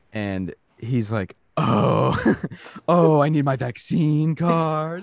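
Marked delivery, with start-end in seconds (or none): 1.5-5.0 put-on very slow, booming, loud, high, drawn-out old-man voice. Retelling a customer at the movie theater asking for his card: imitating a loud old man.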